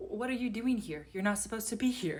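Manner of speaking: put-on tired and upset tone of voice. Retelling confronting the person subletting the place: imitating tired, upset tone. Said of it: "Tired and upset".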